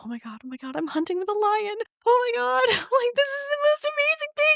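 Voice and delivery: mock freaking out, very high, rising voice. Retelling a woman's reaction to hunting with a lion: imitating someone freaking out. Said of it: "She's like freaking out".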